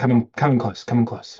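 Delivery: loud theatrical whisper. Acting out teaching a board game at a convention: half-whisper. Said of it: "after the whisper".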